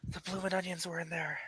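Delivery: slight whisper. A player in a role-play scene voices a faintly heard line as a slight whisper. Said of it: "slightly like a whisper of".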